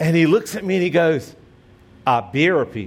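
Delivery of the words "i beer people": put-on thick Georgia accent, lower, slower. Retelling a man's reply to the speaker, in a very Georgia accent. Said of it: "in a very Georgia accent".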